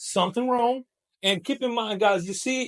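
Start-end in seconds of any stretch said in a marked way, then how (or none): 0.0-0.8 rising pitch on wrong. Teaching closed-question intonation, rising intonation on wrong. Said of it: "the intonation goes up because it's in closed question".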